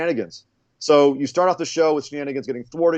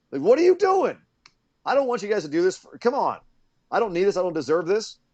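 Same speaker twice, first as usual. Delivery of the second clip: put-on mad scolding, high-pitched and swooping; 5 semitones higher than usual. Retelling a backstage scene after the others were left in the ring, imitating Hangman Page yelling. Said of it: "and he yelled at them".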